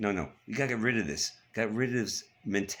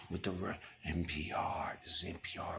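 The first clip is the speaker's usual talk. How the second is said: breathy, whispery, hushed public-radio announcer voice; 4 semitones lower, 9 dB quieter than usual. Mocking a news network, imitating an NPR announcer: whispery NPR voice. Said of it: "my whispery voice".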